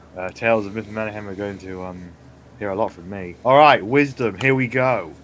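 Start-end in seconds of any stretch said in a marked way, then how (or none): none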